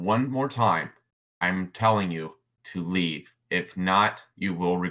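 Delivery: possessed-sounding mechanical voice. Narrating a scene, Phantasm floats up and warns someone to leave: Phantasm's mechanical ghostly voice. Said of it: "that mechanical, almost like ghostly type voice".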